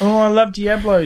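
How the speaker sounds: teasing high voice. Teasing Ferg in front of the group about his game-of-the-year vote, mocking Ferg impression. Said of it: "Ferg's sitting there all year saying".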